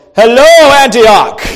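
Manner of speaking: booming, very loud, high-pitched proclamation. Speaker describing how God did not speak down from the clouds: God voice. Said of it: "that was my God voice".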